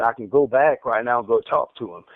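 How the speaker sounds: ordinary delivery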